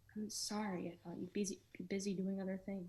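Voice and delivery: hushed whisper. Acting a scene, not wanting to wake someone: whispering. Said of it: "What are you whispering for?".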